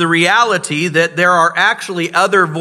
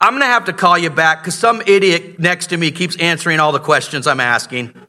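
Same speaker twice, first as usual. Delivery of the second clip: ordinary talk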